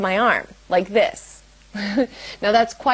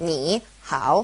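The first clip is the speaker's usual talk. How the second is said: both ni and hao with dipping third tone; 5 semitones lower, 3 dB quieter than usual. Showing how two third tones side by side sound: both syllables in third tone. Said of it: "a third tone and a third tone next to each other".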